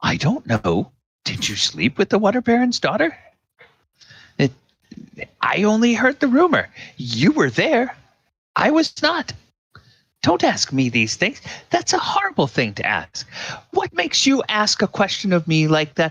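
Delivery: rising indignant voice. Voicing a proper lady asked about a rumor: rising indignant voice. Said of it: "her voice starts to, starts to raise".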